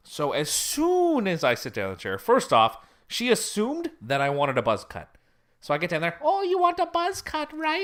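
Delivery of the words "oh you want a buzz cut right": very high, put-on, stray Jamaican-tinged accent. Speaker retelling the woman cutting their hair assuming a buzz cut, accidentally Jamaican-sounding accent. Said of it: "I'm making her sound like she's Jamaican now".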